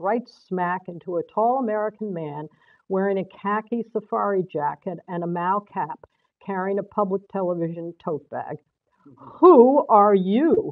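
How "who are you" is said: loud, astonished, amazed, caught off guard. A tall American man bumped into on the staircase asks the narrator, amazed. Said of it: "he asked in amazement".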